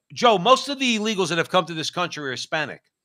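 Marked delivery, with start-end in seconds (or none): none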